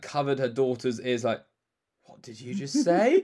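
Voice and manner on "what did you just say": raised, put-on shocked and horrified mother voice.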